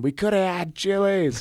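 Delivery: mock, very high-pitched, aggrieved, upset yell. Retelling what was yelled at a platoon mate: imitating own past yell. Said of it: "I kept yelling at him".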